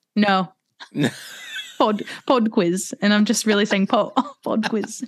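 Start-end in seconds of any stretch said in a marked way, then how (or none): 1.8-3.0 weak, bad put-on British accent. Asked to say more than one phrase, the speaker repeats it in a bad British accent. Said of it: "Is that your best British accent?".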